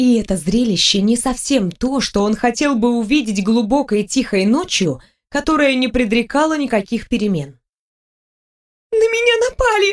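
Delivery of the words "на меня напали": very high squeak, forcing tears. A twelve-year-old girl begs a stranger for protection at night, quiet squeak, forcing tears. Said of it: "Тихо пискнула я, выдавливая слезы".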